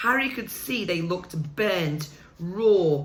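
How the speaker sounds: plain reading voice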